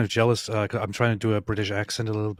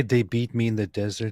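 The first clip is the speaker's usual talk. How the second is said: ordinary delivery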